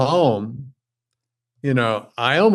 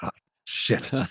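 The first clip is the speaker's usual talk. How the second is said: low whisper under the breath, dismayed. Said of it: "it's like".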